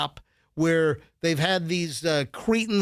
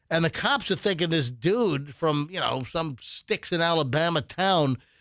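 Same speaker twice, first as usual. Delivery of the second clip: normal talking voice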